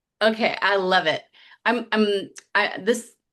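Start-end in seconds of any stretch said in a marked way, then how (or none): 1.7-3.1 very slow, halting stutter with stumbling restarts. Reacting warmly to the other speaker's point, stuttering. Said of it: "I'm stuttering".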